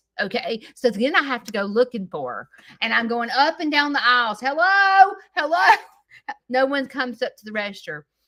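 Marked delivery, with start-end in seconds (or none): 4.4-5.8 play-acted exasperated shout, loud and high. Recounting searching store aisles for someone at the register, retelling yelling hello. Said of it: "I'm yelling hello".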